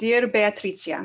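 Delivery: put-on Italian accent pronunciation. Reading aloud the opening line of a fancy letter: Italian pronunciation. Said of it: "Why am I pronouncing your sister's name Italian?".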